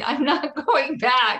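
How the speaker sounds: play-acted, high, loud screaming. Retelling how she refused to go back, the speaker re-enacts her own screaming. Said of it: "I was screaming".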